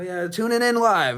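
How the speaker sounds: voice fading in. Retelling an old radio news broadcast, imitating a reporter approaching the mic. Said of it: "like he was approaching his mic".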